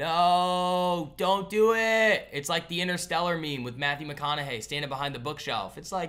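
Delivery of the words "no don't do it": very slow, very loud, drawn-out high screaming. Retelling warning viewers not to buy a stock: screaming. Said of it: "and I'm screaming".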